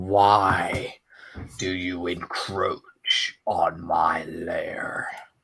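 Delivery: very decrepit ancient voice, drawn-out "why". A game master voices an unseen being heard in a player's head: very decrepit old voice. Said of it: "in a very decrepit old voice".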